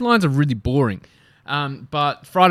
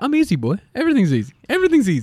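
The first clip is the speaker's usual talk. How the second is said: voice jumping an octave higher in pitch; 6 semitones higher than usual. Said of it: "your voice always goes an extra octave".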